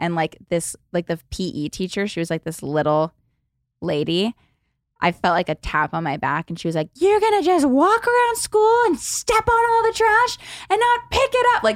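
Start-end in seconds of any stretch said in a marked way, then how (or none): 6.9-11.5 screaming, higher. Retelling being told off by the P E teacher: imitating a teacher screaming. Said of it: "screaming at me".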